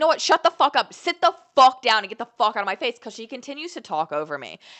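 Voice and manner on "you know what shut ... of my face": loud, pitched-up, shouting yell. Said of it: "yell at her like that".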